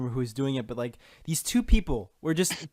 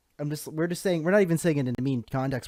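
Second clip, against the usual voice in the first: plain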